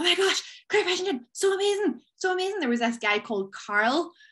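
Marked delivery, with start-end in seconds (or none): 0.0-2.6 high, gushing starstruck fangirl squeal. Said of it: "We were like".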